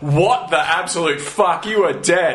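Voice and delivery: ordinary talk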